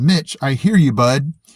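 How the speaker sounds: ordinary talk, nothing marked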